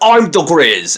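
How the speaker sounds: loud, exaggerated, over-the-top put-on British accent. Retelling how a performer improvised a character, the speaker does an over-the-top British accent. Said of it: "put on a really like over the top British accent".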